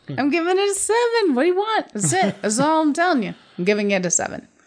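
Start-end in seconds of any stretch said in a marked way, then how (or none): 0.1-1.9 very high, pumped-up, excited voice. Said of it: "more excited".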